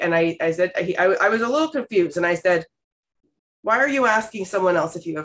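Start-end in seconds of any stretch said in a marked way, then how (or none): none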